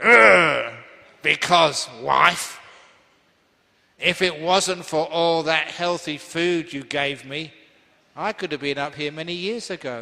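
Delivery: acted angry man voice. A monk acts out the role of an angry husband toward his wife: acting an angry husband. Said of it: "act out the role of an angry husband".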